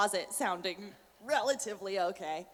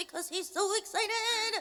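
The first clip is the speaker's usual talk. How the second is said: put-on excited raccoon boy voice, higher pitch; 13 semitones higher than usual. Answering a fan question by showing how the character Jackie talks: Jackie voice. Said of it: "he talks like this".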